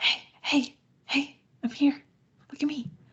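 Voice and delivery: creepy, beckoning calling voice. Acting out a character calling from the bushes: creepy Gatsby voice. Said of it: "Gatsby calls to him from the bushes like a creeper".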